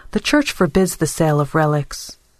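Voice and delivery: ordinary talk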